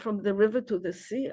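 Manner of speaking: ordinary delivery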